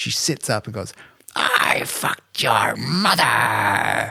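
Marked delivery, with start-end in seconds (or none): 1.3-4.1 put-on loud, very slow, drawn-out old woman's scream. Retelling how an old woman sat up in bed: imitating her screaming. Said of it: "just starts screaming it over and over".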